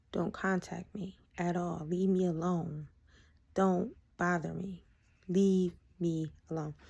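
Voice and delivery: slow, dead serious and firm. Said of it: "And I was serious, and I said it just like that".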